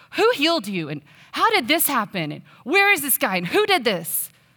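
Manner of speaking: mock pointed, accusatory tone with swooping pitch. Imagining people questioning a man who was healed, in a mock-accusatory tone. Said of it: "I imagine them in kind of an accusatory tone".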